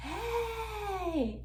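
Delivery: high-pitched yelling.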